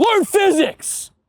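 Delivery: mock heated yell, very high and shrill. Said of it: "Crash just yells".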